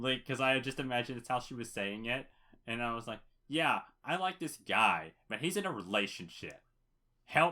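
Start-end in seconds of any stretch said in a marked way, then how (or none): 3.5-7.5 swooping, really sarcastic voice. Recounting reading someone's message aloud, retelling a sarcastic reading. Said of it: "in like a really sarcastic voice".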